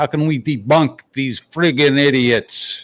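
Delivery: fake, poorly done New York accent. Asking a question while putting on a bad New York accent. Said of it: "That's my New York accent. Pretty bad, huh?".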